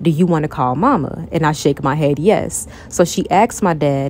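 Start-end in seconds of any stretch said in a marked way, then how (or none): none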